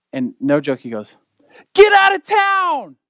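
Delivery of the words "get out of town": put-on very high, drawn-out yell. Retelling how a restaurant guest reacted: imitating a man yelling. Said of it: "yells it for everyone in the restaurant".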